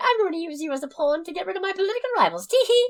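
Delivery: very high-pitched good-witch voice. Doing a bit imitating Glinda scheming: Glinda voice. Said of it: "my bit of Glinda going".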